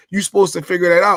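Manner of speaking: fast, mad, irritated, annoyed retort. Recounting an argument, the speaker quotes a woman's reply: imitating someone mad. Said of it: "She gets mad and says".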